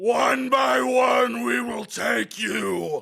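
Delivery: high, rough demon voice. Asked for their best demon Deadite impression, the speaker says the line in Deadite voice. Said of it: "your best demon Deadite impression".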